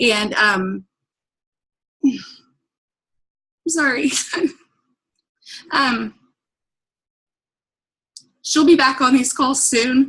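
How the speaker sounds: tearful, crying through the words. Explaining to new people on the call why her sister is absent, crying. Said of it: "I didn't mean to start crying".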